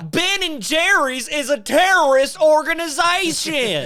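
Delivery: shrill, very loud, high pronouncement. Accusing someone of advocating for terrorists: Nancy Grace voice. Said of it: "he and Nancy Grace talk the exact same way".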